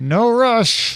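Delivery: forced politeness through clenched teeth. Mimicking restaurant staff rushing diners out of a booth: mock gritted-teeth delivery. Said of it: "through gritted teeth".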